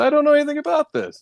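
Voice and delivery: play-acted smug, self-satisfied, very high-pitched voice. Retelling a suspect's line in an interrogation room: imitating a smug reply. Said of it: "he kinda smugly says".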